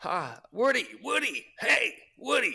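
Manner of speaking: high, slow, drawn-out calling voice. Answering a request for an impression: Tom Hanks as Woody impression. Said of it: "Can you do an impression of Tom Hanks?".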